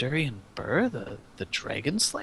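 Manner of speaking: very quiet, hushed, barely audible words. Narrating a character who reads the signed name on the book, hushed voice. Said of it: "He kind of hushes his voice and says".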